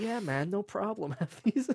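put-on casual American accent, anime-dub style. Describing a random game character handing over potions: imitating an American accent. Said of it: "with an American accent that's just like".

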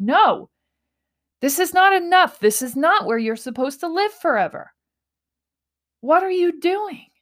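high, loud yelling.

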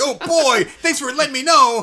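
high, slow put-on character voice. Voicing a gun that thanks its owner for the warning: voicing the gun replying. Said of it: "you letting the gun know".

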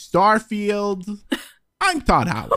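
high pitch with big swooping intonation. Phoning a game director on request, doing a Todd Howard impression. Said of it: "He sounds a, a little something like this".

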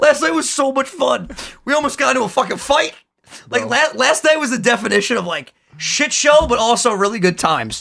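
talking through laughter, words broken up by giggles. Recounting last night when people kept falling over, laughing while talking. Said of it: "Sorry, I can't stop laughing".

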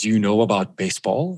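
threatening, foreboding voice. Retelling a man's question to the speaker, imitating a very ominous voice. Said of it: "he says it in his very ominous voice".

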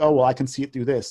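usual speaking voice

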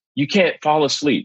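mock yelling. Retelling how the guy behind the counter yelled at a woman nodding off: imitating someone yelling. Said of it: "was just yelling at her".

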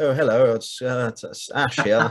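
put-on, proper posh voice. Recalling early episodes with phone voice on: put-on posh voice. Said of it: "I've got my phone voice on, you know, like ... like proper, like posh voice".

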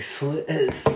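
slow, eerie, deliberate, drawn-out delivery. Retelling the other speaker's line for listeners at home: imitating a slow creepy line. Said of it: "did it really slow and was like".

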